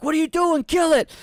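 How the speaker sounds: high-pitched, loud yelling.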